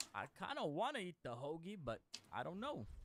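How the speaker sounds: put-on shy, bashful North Carolina accent, swooping pitch. Asked for one last character, doing shy Bill Cosby like a North Carolina guy. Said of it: "sounds like North Carolina guy".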